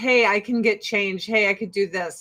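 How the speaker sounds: ordinary talk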